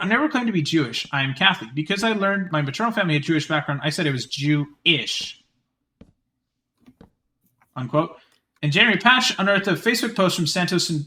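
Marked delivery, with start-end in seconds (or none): none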